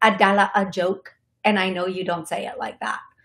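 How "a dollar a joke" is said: affected, put-on hip, cool, laid-back delivery. Repeating a phrase a second time: put-on hip urban delivery. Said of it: "say that in a way that is kind of hip".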